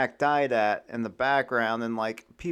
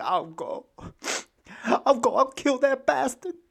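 very high, tearful sobbing outburst; 12 semitones higher than usual. Acting out a character's vow in a story scene: crying. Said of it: "Tom's crying".

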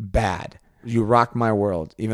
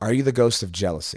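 normal talking voice

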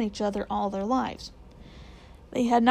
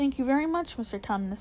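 ordinary delivery

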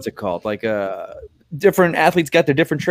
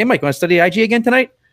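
eager, high-pitched tone. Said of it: "That was actually a pretty good impression".

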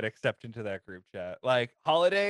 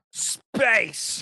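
one word in a put-on Russian accent; 9 semitones higher, 4 dB louder than usual. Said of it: "Tim Curry with a Russian accent going".

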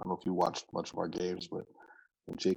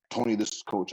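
put-on gruff old man voice; 3 semitones higher, 4 dB louder than usual. Retelling a phone call from an old coach: imitating Coach Bruce, gruff old man. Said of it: "this old gruff old man now".

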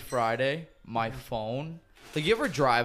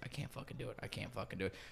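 put-on panicked voice, much quieter; 14 dB quieter than usual. Speaker recounting when Tomei was asked to do this: imitating Tomei panicking. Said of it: "she had a full-blown panic attack".

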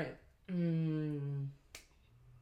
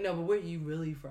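ordinary talk

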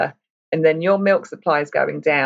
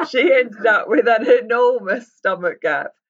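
talking through laughter, much higher pitch; 5 semitones higher than usual. Talking about a sister's pregnancy, laughing while speaking. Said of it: "sorry, I'm laughing".

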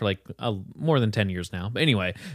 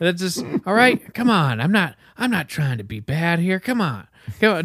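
mellow, compassionate, caring coaxing tone, pitched up; 7 semitones higher than usual. Retelling a friend's impression: compassionate, mellow Joe Biden impression. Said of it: "I do the compassionate, mellow Biden".

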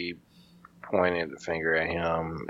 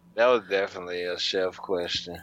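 ordinary talk

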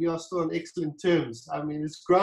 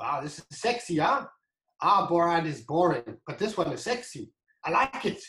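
put-on English spoken with a German accent. Retelling what a man said on seeing the bottle mock-up, imitating his german accent. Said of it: "In his German accent".

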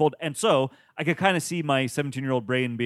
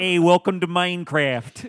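heavy put-on Chicago accent, raised; 5 semitones higher, 5 dB louder than usual. Imitating a minecraft video maker's greeting: imitating a thick chicago accent. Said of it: "a thick Chicago accent".

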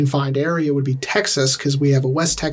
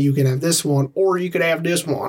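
put-on Texas-accented speech; 2 semitones higher than usual. Discussing accents with another speaker, putting a line in a Texas accent. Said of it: "to put it in a Texas accent".

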